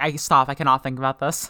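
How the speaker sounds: usual speaking voice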